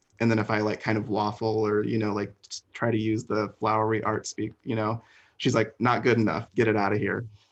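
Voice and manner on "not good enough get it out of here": put-on blunt drill-sergeant voice. Describing how she reacts when he waffles, mimicking a blunt drill sergeant. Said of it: "she's like a drill sergeant almost".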